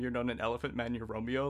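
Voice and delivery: ordinary talk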